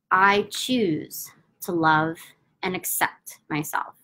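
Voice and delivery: slow, unhurried delivery with long pauses between phrases.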